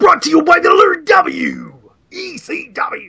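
every word stretched out, high and loud. Repeating the commentator's line: Paul Heyman impression. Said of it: "You sounded so much like Paul Heyman".

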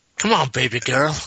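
mock, clumsy, failed Cajun accent. Mocking a man who can't manage the accent, imitating a bad cajun accent. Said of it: "there's loads of times he's like".

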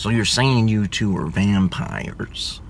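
low, rumbling voice with a crackle. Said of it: "best impersonation you've ever heard of him".

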